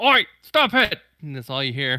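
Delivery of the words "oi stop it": shrill, very high, loud panicked orc voice. Voicing a panicking orc shooting a pistol at a player: panicked orc voice. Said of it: "he's panicking and shooting at you with the pistol".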